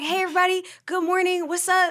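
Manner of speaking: cheerful, bright tone. Imitating the other speaker arriving every morning: imitating a good-mood greeting. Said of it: "you would always be in a good mood".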